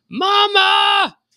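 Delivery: mock desperate scream, very high and drawn out. Imitating people in arrest videos, retelling a scream for mama. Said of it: "they start screaming".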